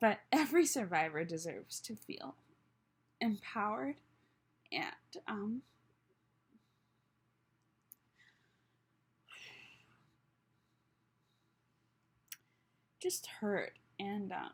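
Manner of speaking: crying while talking, tearful. Sharing something personal with listeners, crying while talking. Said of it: "I can't believe I'm crying so much".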